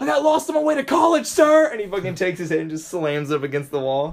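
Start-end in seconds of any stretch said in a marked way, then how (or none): 0.0-1.7 very loud, high-pitched, mouthy shout. Retelling a movie scene, imitating Jake Gyllenhaal being mouthy to a drill sergeant. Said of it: "Jake Gyllenhaal gets mouthy with him".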